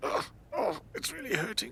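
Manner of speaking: groaning in pain, breathy. Complaining about an upset stomach: groaning with stomach pain. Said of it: "my stomach's upset".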